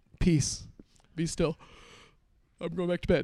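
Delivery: hippie-style put-on voice. Retelling Jesus waking in the storm and calming it: hippie-style Jesus voice. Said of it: "in kind of a hippie fashion".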